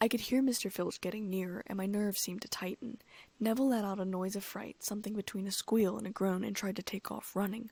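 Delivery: ordinary delivery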